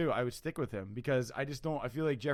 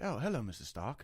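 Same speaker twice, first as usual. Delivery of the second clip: mock robot-like droid voice; 3 dB quieter than usual. Speaker compares a droid's voice to Jarvis in Iron Man, Jarvis voice. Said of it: "the right like cadence in his voice for a droid".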